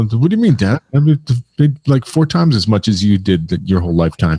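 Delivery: ordinary delivery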